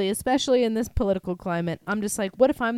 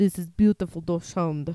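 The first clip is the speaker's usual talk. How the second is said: woman's put-on Russian accent in English; 5 semitones lower, 3 dB quieter than usual. Retelling a Russian lady's praise of a dog: imitating a Russian lady. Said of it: "a Russian lady come up, came up to me and was like".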